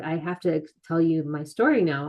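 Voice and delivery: normal talking voice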